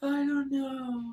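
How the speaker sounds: very high, wispy, tiny half-whispered voice. Retelling how a friend answered when talked to over the weekend: tiny half-whispery voice. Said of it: "It's such a whispery little".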